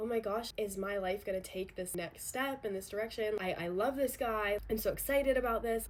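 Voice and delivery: ordinary talk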